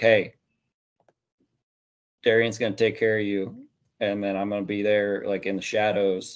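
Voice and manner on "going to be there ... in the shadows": ordinary talk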